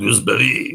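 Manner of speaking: the word "gooseberry" said with a French accent. Showing how someone would say gooseberry, French accent on gooseberry. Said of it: "say gooseberry with a French accent?".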